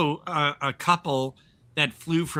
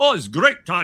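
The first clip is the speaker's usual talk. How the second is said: attempted, put-on Italian accent; 3 semitones higher, 4 dB louder than usual. Pretending to be Domiziano talking to Todd: Domiziano impression. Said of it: "pretend I, I'm Domiziano and I'm going".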